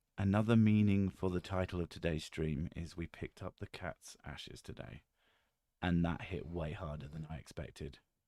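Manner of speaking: hushed whisper. On stream, speaking so the kids won't hear: whispering. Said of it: "I'll have to whisper this one".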